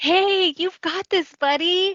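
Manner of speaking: mock bright, very high, encouraging cheerful shout. Retelling a neighbor shouting encouragement to a man who hates walking; retelling a neighbor's cheerful shout. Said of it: "she smiled and shouted over to him".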